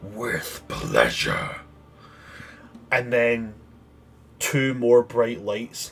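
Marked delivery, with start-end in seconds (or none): 0.0-1.6 very low, deep, gruff, hushed dragon voice. Narrator voicing the being that speaks as the players shape it: deep, gruff voice. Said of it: "you hear this deep, gruff voice".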